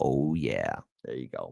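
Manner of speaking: very low, creaky, raspy, seductive sexy voice. After reading out a message asking for quiet, trying out a sexy voice. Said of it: "How do you like this sexy voice?".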